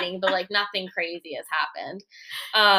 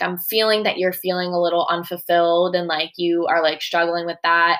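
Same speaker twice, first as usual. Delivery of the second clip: ordinary delivery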